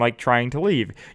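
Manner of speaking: ordinary talk, nothing marked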